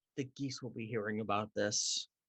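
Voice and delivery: loud stage whisper. Threatening a game attendant in character so he can hear: stage whisper. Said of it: "a stage whisper so he can hear it".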